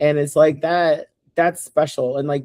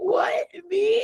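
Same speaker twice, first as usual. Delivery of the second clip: acted, very high, weepy, tearful astonishment; 6 dB quieter than usual. Retelling a fan's reply to being given a shirt: imitating someone crying. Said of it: "And just, like, crying".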